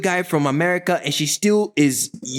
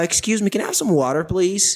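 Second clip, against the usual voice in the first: put-on strong American accent. Speaker recalls asking for something in a room full of people, American accent. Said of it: "because of my American accent".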